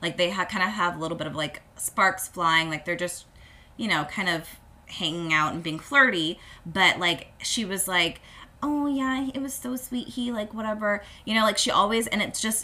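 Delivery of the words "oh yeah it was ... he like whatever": put-on high, gushing baby voice. Retelling how Lindsay talks in the episode: imitating Lindsay's baby voice. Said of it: "her baby voice".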